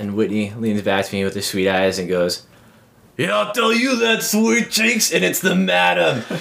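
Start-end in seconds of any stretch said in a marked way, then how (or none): 3.2-6.2 put-on New Jersey man's accent, very high. Retelling what a possessed woman said to him, new jersey man voice. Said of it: "she sounds like a New Jersey man".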